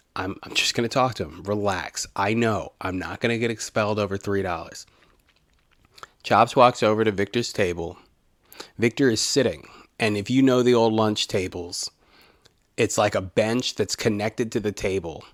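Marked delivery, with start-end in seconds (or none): 0.2-4.9 easygoing, unbothered, calm and cool voice. Retelling a classmate's reply about a three-dollar debt: imitating Chops calm and cool. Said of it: "he's so calm and cool".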